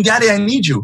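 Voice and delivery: put-on high, desperate, panicked child's scream. Retelling the daughter screaming while hanging from the bars: imitating a screaming child. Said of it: "she's screaming".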